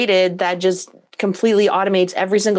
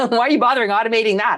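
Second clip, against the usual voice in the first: mock condescending, looking-down tone; 2 semitones higher than usual. Retelling how some people look down on automating: imitating people looking down on you. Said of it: "some people look down on you like".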